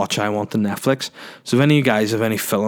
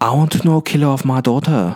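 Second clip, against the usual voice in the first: put-on thick, heavy Chinese accent; 3 semitones higher, 4 dB louder than usual. Retelling a film scene, imitating Jackie Chan's accented English. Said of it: "he still speaks kind of like".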